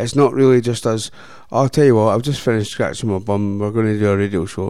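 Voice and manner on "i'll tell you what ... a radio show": plain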